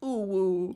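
idle, high penguin calls, ooh then woo. Recalling penguins who sat in the corner: imitating penguins sitting in the corner. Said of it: "sit there in the corner and be like".

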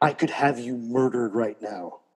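put-on whispering voice. Retelling how a friend hugged the speaker and whispered in their ear: imitating a friend whispering. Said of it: "he whispers in my ear".

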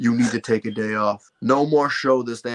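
dropped, low, deep voice. Retelling his parents telling him to take a day off: imitating parents' deep voice. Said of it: "they would get the deep voice on".

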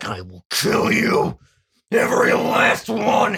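steroid-pumped tough-guy voice. Acting out a character's vow from Attack on Titan: roided macho voice. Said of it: "does not sound like he just did a line of fucking synthol".

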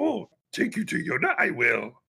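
bouncing, swooping sing-song voice, pitch swinging widely. Retelling a movie scene, quoting the swamp creature: Yoda voice. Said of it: "That was pretty good".

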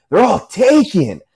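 acted-out scream. Speaker acts out what another guy screamed back at him, retelling a scream. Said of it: "and he screams like".

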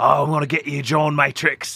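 put-on odd, offbeat Australian accent. Retelling a film character's line to his opponent, in a weird Australian accent. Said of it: "he's got this weird like Australian accent and he's like".

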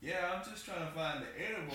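plain

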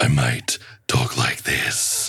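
dark, slow, threatening, menacing storyteller voice. Asked to do a voice, the speaker demonstrates a menacing voice. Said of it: "menacing voice".

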